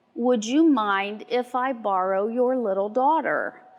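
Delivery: barely audible, faint male voice. Retelling what a grandfatherly gentleman asked in a store: imitating a faint male voice. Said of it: "faint voice, but a male voice".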